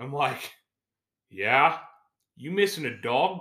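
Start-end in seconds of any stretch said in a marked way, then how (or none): 2.4-3.4 broad, thick, high Australian drawl. Retelling a man's question, in a heavy Australian accent. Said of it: "he's in a heavy Australian accent".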